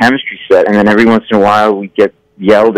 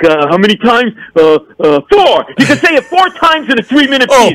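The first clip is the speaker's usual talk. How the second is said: mock very high, swooping, furious flustered stammering. Retelling the network president making up a rule: imitating an apoplectic boss. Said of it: "apoplectic, so mad".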